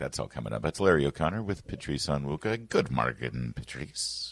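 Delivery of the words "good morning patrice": put-on Irish accent. Host greeting a guest on air at the show's start, in an Irish accent. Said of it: "That's my Irish voice there".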